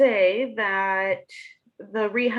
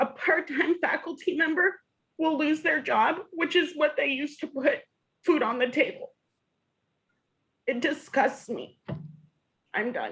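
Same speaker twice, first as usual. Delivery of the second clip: rising emotion, voice pitched up; 6 semitones higher than usual. Speaking up as a part-timer before others: getting emotional. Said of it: "I'm getting emotional".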